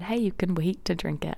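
ordinary talk, nothing marked

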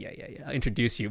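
eager, mom-style voice. Retelling how a partner introduces people: imitating Katie's embarrassing mom way. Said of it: "she does it in such a mom way".

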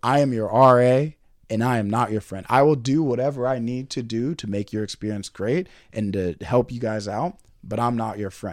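ordinary talk

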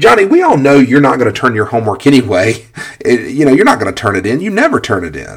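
snide, loud, swooping sarcastic tone. Giving an example of a teacher scolding a student: imitating a sarcastic teacher. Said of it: "pretty sarcastic, right?".

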